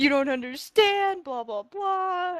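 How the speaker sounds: high sobbing cry through tears, "blah" drawn out. Retelling crying in a bar over an ex: retelling own sobbing. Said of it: "I'm in tears, I'm sobbing".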